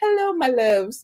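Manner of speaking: put-on voice, sweet but shady. Imagining Monique lightly throwing shade on the show: imitating Monique's nice-nasty voice. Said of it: "with her nice, nasty".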